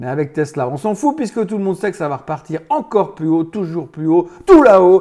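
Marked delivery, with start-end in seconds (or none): 3.4-5.0 loud, carried-away, cheering tone. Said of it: "pardon, je m'emballe".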